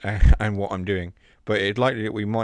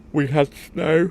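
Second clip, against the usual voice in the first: words said mid-yawn, pitched up; 7 semitones higher, 4 dB louder than usual. Reminiscing and yawning mid-sentence: yawning while talking. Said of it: "I'm yawning whilst talking".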